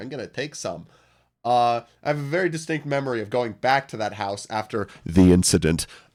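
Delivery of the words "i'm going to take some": put-on little child voice, quieter. Retelling finding a basement science kit: imitating own child self. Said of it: "little child me would run up to it and be like".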